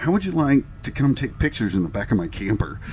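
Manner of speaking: plain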